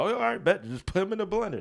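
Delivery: high-pitched, cocksure, dead-sure, overconfident tone. Retelling what Knuckles said about the blender: imitating Knuckles. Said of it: "He's like".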